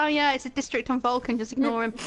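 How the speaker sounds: ordinary talk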